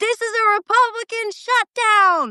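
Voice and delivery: high-pitched, slow, shouted delivery. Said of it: "I shouted into this microphone".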